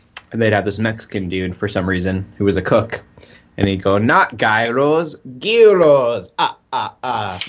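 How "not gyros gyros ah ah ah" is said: very slow, drawn-out ah-ah-ahs, each word stretched. Retelling how a cook used to talk: the Count voice. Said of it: "like the Count".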